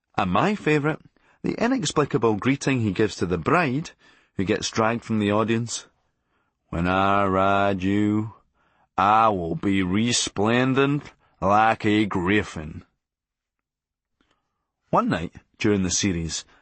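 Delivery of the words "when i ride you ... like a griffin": deadpan flat American drone, very slow pace. Quoting a sketch character's lines: droll American monotone as Chauncey O'Halloran Junior. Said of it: "delivered in a droll American monotone".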